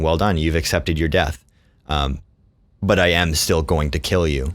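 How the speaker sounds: usual speaking voice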